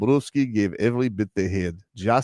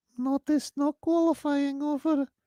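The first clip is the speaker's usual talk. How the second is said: put-on motherly voice, very high-pitched and slow; 3 dB quieter than usual. Asked for an impression of his mother: impression of his mother. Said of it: "you wanted me to do an impression of his mother".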